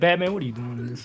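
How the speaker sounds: normal talking voice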